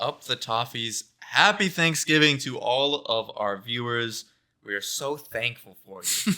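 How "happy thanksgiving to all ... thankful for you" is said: heavily sarcastic, loud and slow. Thanking the viewers at the end of the show: sounding extremely sarcastic. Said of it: "it came off extremely sarcastic".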